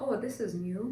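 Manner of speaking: calm, flat, unraised voice. Retelling a husband's reply to twin news: imitating a calm, unexcited tone. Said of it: "no raising of a voice, just like".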